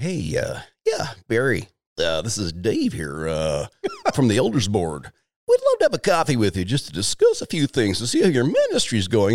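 drawn-out, swooping voice cracking with nerves. Retelling a phone call from the elders board, imitating Dave's cracking voice. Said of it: "His voice is cracking".

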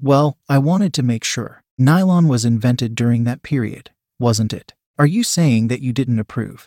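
plain

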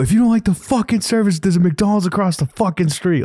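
play-acted all-out furious screaming, high. Retelling shoving the receipt back at a customer, retelling own screaming.

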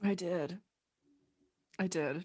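very soft, drained, weary, worn-out voice. After working two coffee-shop shifts, speaker confirms it to the host: tired, worn-out voice. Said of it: "just your voice sounds like you worked two shifts yesterday".

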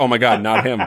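mock, imitated confident tone. Retelling another speaker's earlier remark, imitating a confident remark. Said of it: "you so confidently were like".

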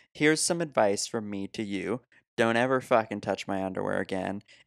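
ordinary talk

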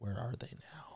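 hushed, whispered aside.

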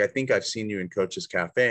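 ordinary talk, nothing marked

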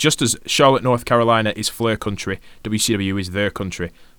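ordinary talk, nothing marked

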